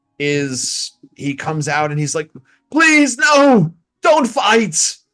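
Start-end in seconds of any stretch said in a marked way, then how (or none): 2.7-5.0 shrill, very high yell at the top of the lungs. Voicing a man as he comes out, yelling at the top of his lungs. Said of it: "yelling at the top of his lungs".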